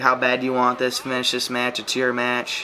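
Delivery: ordinary talk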